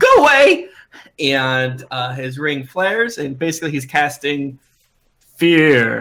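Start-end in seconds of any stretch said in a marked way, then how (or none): 0.0-0.7 very high, loud, commanding shout. Voicing a restrained character who casts fear: character shouting. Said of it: "he shouts".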